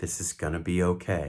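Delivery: very calm, steady, even, controlled, comforting voice. Showing what to say to someone having a panic attack, very calm, controlled voice. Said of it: "in a very calm, controlled voice".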